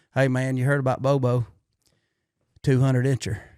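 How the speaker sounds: put-on rural Southern American accent. Acting out what others say to him, in a put-on redneck Southern accent. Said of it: "I always go into the redneck Southern accent when I do this".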